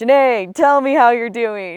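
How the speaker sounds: very loud, hearty, welcoming grandfatherly booming voice. Imitating a grandfather greeting his oldest grandchild, big booming voice. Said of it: "He had a really big booming voice".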